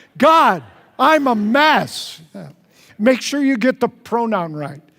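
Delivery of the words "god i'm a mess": enthusiastic, slow, high, "mess" drawn way out. Leading a group in saying a prayer out loud together, enthusiastic. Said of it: "let's say it with enthusiasm".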